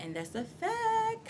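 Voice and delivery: high, slow, soft, dramatic tone.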